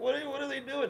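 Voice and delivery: very high, close to tears, acted out. Retelling how a girlfriend reacted on arrival: imitating someone almost crying. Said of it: "she's almost crying".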